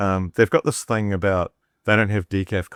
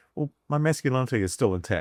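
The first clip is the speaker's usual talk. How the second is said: ordinary talk, nothing marked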